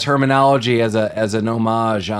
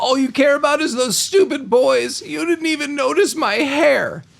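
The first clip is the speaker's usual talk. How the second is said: put-on very high, whiny, angry teenage girl voice. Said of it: "she's like".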